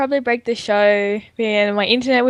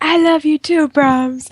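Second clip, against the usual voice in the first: tiny, small, high little voice; 6 semitones higher, 4 dB louder than usual. Imitating the shouted-out game design lead replying: little voice imitating John Peters. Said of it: "there's a little voice like".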